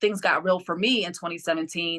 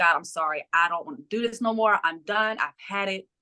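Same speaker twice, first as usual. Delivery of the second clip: put-on crying, sobbing voice. Retelling praying to God at a breaking point: retelling own crying prayer. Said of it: "I'm crying".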